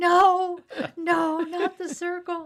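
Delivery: shrill, very high, very loud, very slow drawn-out scream. Retelling how a woman reacted to a threat, imitating someone screaming. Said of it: "she started screaming".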